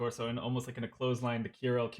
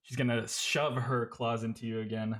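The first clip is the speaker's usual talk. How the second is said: plain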